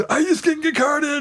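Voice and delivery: mock very high-pitched, giddy teen excitement. Retelling what a character said after not getting carded: imitating a giddy teenager. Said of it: "acting like a giddy little teenager".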